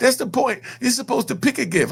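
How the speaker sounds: high, whining, crying-about-it voice. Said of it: "you're whining and crying about a gift".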